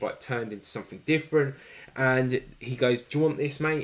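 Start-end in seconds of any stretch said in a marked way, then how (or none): none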